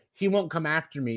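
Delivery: ordinary talk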